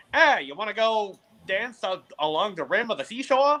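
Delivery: put-on heavy fifties dockside old Hollywood movie accent. Explaining an old movie accent to a listener, giving an example: Humphrey Bogart movie accent. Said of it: "the century man or the bicentennial accent".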